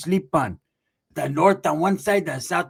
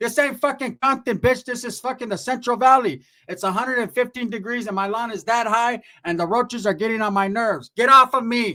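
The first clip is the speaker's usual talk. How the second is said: put-on yell, higher; 6 semitones higher than usual. Retelling how the aunt yelled at everyone to get up: imitating aunt yelling. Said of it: "she's yelling at them".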